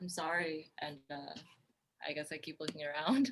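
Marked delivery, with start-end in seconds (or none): 0.0-0.7 whispered, quieter. Closing a trunk as a game character, whispering an apology: whispering. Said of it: "I whisper".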